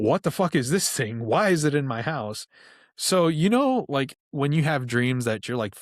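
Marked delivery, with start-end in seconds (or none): 0.0-2.5 put-on angry outburst, higher pitch. Retelling a dream where a monster appears in the house: retelling an angry outburst. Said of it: "I'm pissed off because I'm like".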